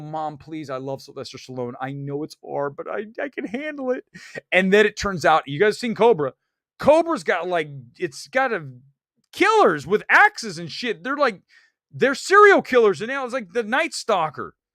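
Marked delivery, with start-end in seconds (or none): 0.0-4.1 mock, earnest pleading. Retelling begging his mom to take him to an R-rated movie: imitating own childhood plea. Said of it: "And I go".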